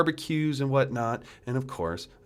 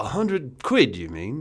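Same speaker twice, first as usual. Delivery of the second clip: put-on British accent. Taking a bet to keep up a British accent: put-on British accent. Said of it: "you cannot keep up this British accent".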